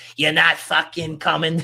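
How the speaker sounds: loud, put-on Boston accent. Retelling a town's reply ahead of the World Cup: masshole accent. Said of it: "what accent I was gonna start doing there, my my masshole accent".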